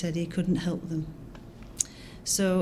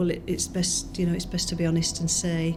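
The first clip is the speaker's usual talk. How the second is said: normal talking voice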